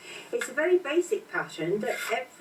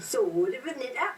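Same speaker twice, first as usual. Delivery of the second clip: slightly higher Cockney accent. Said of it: "Can you do that in your best Cockney accent".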